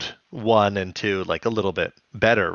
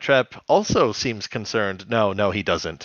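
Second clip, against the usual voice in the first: usual speaking voice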